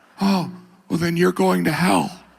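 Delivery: gentle, light voice, slightly high. Acting out a holiday exchange, speaking as Jesus: gentle Jesus voice. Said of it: "that's how Jesus sounds".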